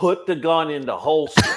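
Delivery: put-on commanding shout. Retelling calling out to a trapped officer: imitating own yell. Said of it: "I yell".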